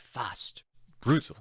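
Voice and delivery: breathy, whispered put-on British accent. Suggesting how a game call should sound, in a British accent. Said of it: "you need like the British accent".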